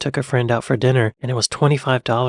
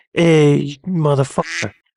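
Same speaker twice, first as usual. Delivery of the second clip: put-on tough New York street accent; 3 semitones higher, 4 dB louder than usual. Comparing American regional accents, the speaker demonstrates a New York accent. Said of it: "they talk like this, kind of like this".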